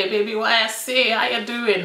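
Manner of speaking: put-on Jamaican accent. Acting out a guy stepping up to a girl, in a fake jamaican accent. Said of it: "with that fake Jamaican accent that I've just put on".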